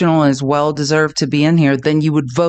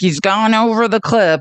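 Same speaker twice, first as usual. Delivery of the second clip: put-on creepy old woman voice, higher; 5 semitones higher than usual. Reacting to a hearing clip, imitating creepy old Virginia. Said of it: "creepy old Virginia being like".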